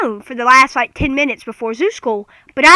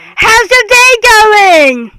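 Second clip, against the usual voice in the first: loud, high-pitched voice; 7 semitones higher, 7 dB louder than usual. Imitating a woman who speaks very loud, the speaker mimics her greeting, mimicking a loud talker. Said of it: "That's a little loud".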